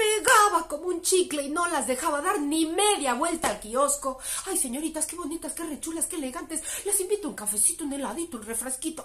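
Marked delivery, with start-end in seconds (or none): 4.5-9.0 wheedling, fawning, smitten, lovesick tone, rushed. Storyteller voices a suitor pestering six sisters in the plaza: lovesick young suitor voice. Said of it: "Este muchacho se llamaba [name], Y el problema que tenían las seis hermanas con el tal [name] es que resulta que el [name], el tal [name], estaba enamorado, profundamente enamorado de las seis hermana".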